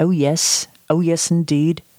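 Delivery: put-on English accent, shown off. Talking about doing accents, then showing off an English accent. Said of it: "But I could do an English accent".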